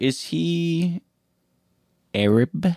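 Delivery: discreet, hushed half-whisper, stretching out "he". Asking the others about the egg napper: half-whispering. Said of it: "Why'd you have to whisper it?".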